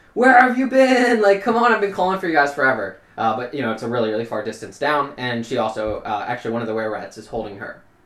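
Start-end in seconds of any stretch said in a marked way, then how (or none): 0.2-3.0 shrill, high-pitched, loud screaming call. Game master voicing Mitha, calling to the group from far below, screaming.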